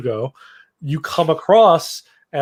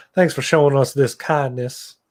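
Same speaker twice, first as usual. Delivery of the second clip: Western drawl in cowboy fashion. Reading a character's line as heard in the head: western accent. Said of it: "I hear it in, like, a Western accent".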